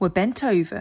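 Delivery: ordinary delivery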